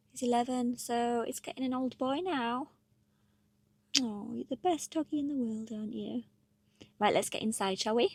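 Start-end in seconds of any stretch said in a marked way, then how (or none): 4.1-6.3 voice used for a dog. Speaker talking to their eleven-year-old dog, in a dog voice. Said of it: "Excuse the dog voice".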